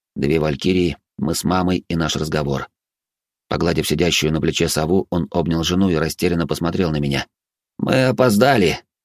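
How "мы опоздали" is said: matter-of-fact, slightly higher, with little regret. Turning to Urh, he states it without much regret. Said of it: "без особого сожаления в голосе, констатировал".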